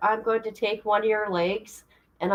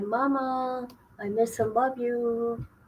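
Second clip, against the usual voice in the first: soft, slow, sweet little voice; 8 dB quieter than usual. Mother retelling her daughter's missed answering machine messages: sweet little child voice. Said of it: "I got her sweet little voice".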